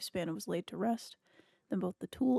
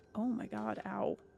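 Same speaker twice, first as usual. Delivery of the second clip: slow, pained, wincing cry of pain; 3 dB quieter than usual. Reacting to a sore knee after sitting too long: wincing in pain. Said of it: "I'm wincing in pain".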